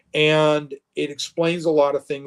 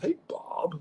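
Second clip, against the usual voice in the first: soft, breathy, hushed voice; 3 semitones higher, 10 dB quieter than usual. Retelling a morning phone call, imitating Todd Stashwick's greeting. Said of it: "like that".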